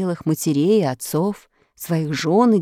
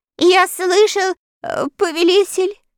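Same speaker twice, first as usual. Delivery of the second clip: quavering, trembling, very high voice; 11 semitones higher, 3 dB louder than usual. A narrator reads the wooden courier answering the dictator, in a trembling voice. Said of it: "дрожащим голосом сказал Верес".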